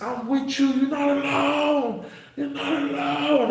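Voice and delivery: mock shrill scream, very high pitch, drawn out. Retell the moment Vince Vaughn calls through the vent to a man being slammed, imitating Vince Vaughn screaming. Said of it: "Vince Vaughn is screaming through the vent".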